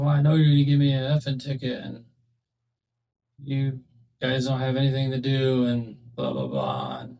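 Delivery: normal talking voice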